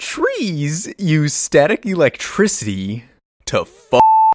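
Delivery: heavy, exaggerated vocal fry. Told to retry a Griffin McElroy impression with more vocal fry. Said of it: "needs more vocal fry try again".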